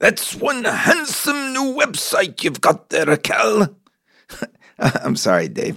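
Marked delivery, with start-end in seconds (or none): 0.0-3.7 very high, rough attempt at an Irish accent. Quoting what Dave said the morning of his performance: imitating Irish Dave's accent. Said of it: "I got to work on my Irish accent".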